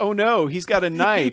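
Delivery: smarmy, dripping sarcasm, high and slow. Retelling a movie scene where a fighter pulls a knife: imitating a smarmy sarcastic line. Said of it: "this smarmy, sarcastic".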